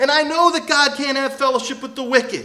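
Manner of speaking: high-pitched, loud, heavily sarcastic retort. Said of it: "He basically says".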